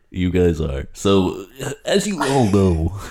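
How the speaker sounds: put-on on-air radio announcer delivery. Co-host opening their show, in a mock radio announcer voice. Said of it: "Why do people on the radio talk like that".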